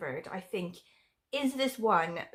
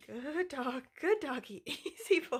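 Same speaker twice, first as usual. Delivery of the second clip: high, slow, strained, forced-sounding voice; 6 semitones higher, 6 dB quieter than usual. Retelling facing a growling dog, quoting what they said: retelling own strained voice. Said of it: "I heard this strained version of my voice".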